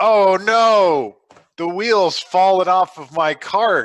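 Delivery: exaggerated overacting. Acting out a broken cart wheel to draw attention: big show. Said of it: "I make a big show of it".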